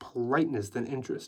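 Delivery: plain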